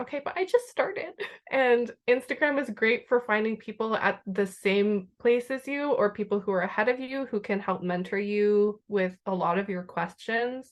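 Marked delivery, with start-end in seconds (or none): 0.0-1.1 high-pitched, exasperated retort tone. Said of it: "And it's like".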